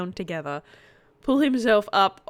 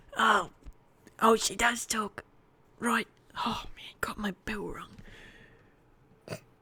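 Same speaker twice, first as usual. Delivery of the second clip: soft, breathy, pained, half-whispered voice; 8 dB quieter than usual. Voicing a character speaking up from the floor, in a pained voice. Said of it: "this sort of pained voice from the floor".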